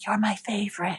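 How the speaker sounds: acted whispering. Retelling touching the tree in the yard: retelling own whisper. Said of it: "I touch the tree and I whisper".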